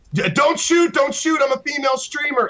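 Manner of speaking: shrill, very high screaming. Retelling being gunned down in DayZ over voice comm, retelling her own screaming. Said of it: "I'd start screaming across voice comm".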